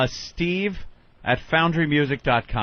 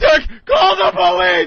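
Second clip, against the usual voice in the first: much higher, louder panicked shriek. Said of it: "You know, you'd be".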